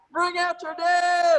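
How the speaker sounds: slow, high, loud street cry at full volume.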